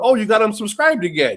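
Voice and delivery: chuckling through the words. Retelling own reaction to a fan resubscribing again: retelling own laughing remark. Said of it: "And I'm laughing, going".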